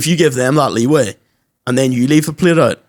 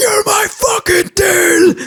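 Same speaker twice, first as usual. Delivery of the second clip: very high, slow angry outburst, deal stretched out. Retelling how a babysitter finally snapped at a teasing kid: imitating someone's meltdown outburst. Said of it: "she literally had a melt".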